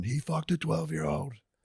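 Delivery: yelling. Retelling people chasing a man around a store: imitating someone yelling. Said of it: "chase him around the store going".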